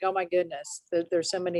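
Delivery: plain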